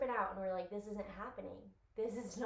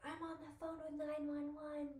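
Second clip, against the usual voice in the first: put-on screaming, higher pitch; 7 semitones higher, 5 dB quieter than usual. Retelling calling nine one one, imitating own screaming.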